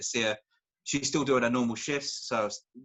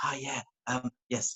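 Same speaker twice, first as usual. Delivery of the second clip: slow, unhurried, hushed half-whisper; 4 dB quieter than usual. Retelling taking calls quietly while wife sleeps: imitating own half-whispering. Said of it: "whispering the whole time when I'm speaking to people".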